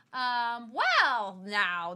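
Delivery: hesitant movie-star voice with swooping pitch. Retelling a scene where George answers her plea for the robe: James Stewart impression. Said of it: "that's my impression of James Stewart".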